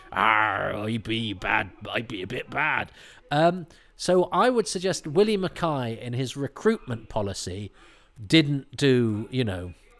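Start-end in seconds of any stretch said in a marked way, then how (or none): 0.2-2.9 put-on drunken, tipsy seafaring pirate voice. Joking that a usurper turned pirate: drunk Archers cast member voice. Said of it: "You suddenly sound like a drunk member of the cast".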